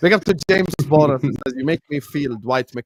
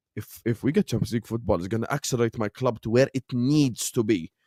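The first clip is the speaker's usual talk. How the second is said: mocking imitation of a way of talking; 2 semitones lower, 6 dB quieter than usual. Mocking a football rival, showing how he talks: imitating another speaker's way of talking. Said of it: "The way that he speaks is like".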